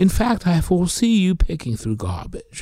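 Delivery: put-on British accent. Retelling an answering-machine message from someone unknown, in a fake british accent. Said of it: "puts on a fake British accent saying".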